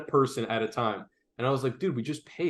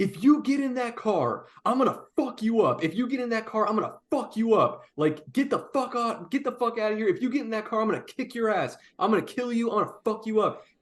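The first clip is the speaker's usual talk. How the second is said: acted, very high, repeated screaming; 10 semitones higher than usual. Retelling a man's threats as he walked to his car: imitating someone screaming. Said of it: "Screaming over and over again".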